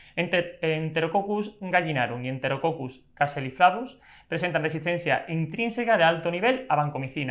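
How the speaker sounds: normal talking voice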